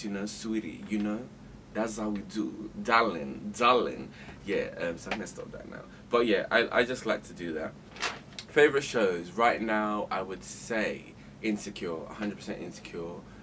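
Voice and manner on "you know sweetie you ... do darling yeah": Nigerian accent with American flavour. Speaker showing off an accent they love to do: American Nigerian accent. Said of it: "I like to do the American Nigerian accent".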